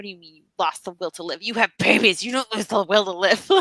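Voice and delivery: imitated muttering under the breath. Retelling what an ex-mother-in-law said in the theater: imitating someone muttering under breath. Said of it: "just muttering under her breath".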